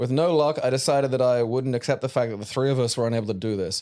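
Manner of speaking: plain reading voice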